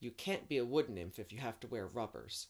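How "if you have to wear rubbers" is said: plain reading voice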